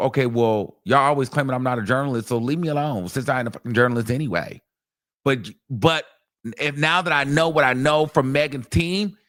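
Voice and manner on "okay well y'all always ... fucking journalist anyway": usual speaking voice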